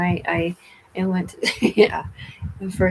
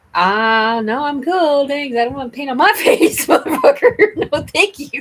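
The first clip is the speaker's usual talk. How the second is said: raised, pitched-up voice spoken through a smile; 8 semitones higher, 7 dB louder than usual. Retelling how they turned down people offering paint: retelling own smiling refusal. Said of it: "I'm just, like, smiling. I'm like".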